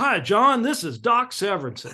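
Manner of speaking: put-on drawling good old boy voice. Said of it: "such, like, a good old boy voice".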